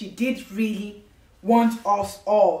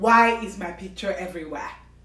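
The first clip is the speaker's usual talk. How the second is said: mock rude, offended, indignant and accusing tone; 2 semitones lower than usual. Retelling what a caller asked on the phone: imitating an offensive tone. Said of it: "in a very offensive tone".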